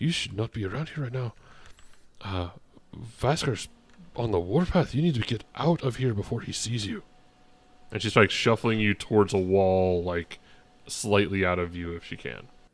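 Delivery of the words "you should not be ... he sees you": hushed, secretive, confiding conspiratorial tone. Voicing a woman who bends down and shuffles you towards a wall, conspiratorial tone. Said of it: "takes this conspiratorial tone".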